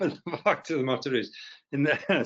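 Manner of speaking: speaking through laughter. After praising a powerful lady, the speaker goes on laughing while talking. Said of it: "I'm laughing because it's true".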